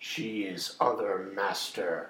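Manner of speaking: very unpleasant, nasty-sounding voice. Voicing the character Doug during the scene, in Doug's very unpleasant voice. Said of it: "says Doug in a very unpleasant voice".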